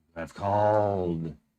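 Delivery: eerie, ghostly, deep voice echoing from nowhere. Narrating a scene to players, voicing a presence in the room, ghostly deep voice. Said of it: "a ghostly, deep voice echoes out and says".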